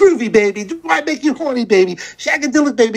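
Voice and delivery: mock high yelling, right up close, in-your-face. Retelling a sketch in an Austin Powers outfit: yelling as Austin Powers fan. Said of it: "Just yell".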